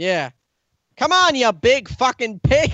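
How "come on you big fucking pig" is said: high, raised, full-on yelled outburst. Imitating Billy Eichner voicing his character: Billy Eichner yelling impression. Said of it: "He would yell a lot".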